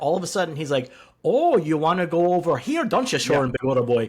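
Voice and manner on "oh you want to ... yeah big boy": loud, bad Wisconsin accent drifting into Irish. Mocking a man's bad accent, the speaker imitates his Wisconsin accent slipping Irish. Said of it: "doing both Wisconsin and it turns into Irish sometimes".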